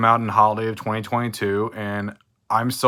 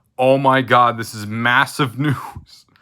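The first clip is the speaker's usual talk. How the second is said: slow speech broken up by laughing; 2 semitones higher, 4 dB louder than usual. Announcing big news to viewers, laughing while talking. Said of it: "Sorry if I'm laughing".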